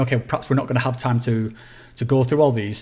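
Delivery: ordinary talk, nothing marked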